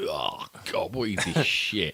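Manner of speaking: play-acted, slow, hushed, disdainful whispered sneer. Recalling own reaction to a tv channel, acting out a past sneer. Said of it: "tutting and sneering".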